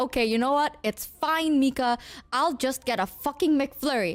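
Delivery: normal talking voice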